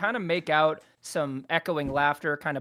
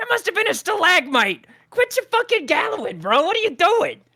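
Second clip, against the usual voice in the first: shrill, very loud, very high goblin holler; 8 dB louder than usual. Voicing a goblin in a cave who shouts at the others: goblin shouting. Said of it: "you hear one of them shout".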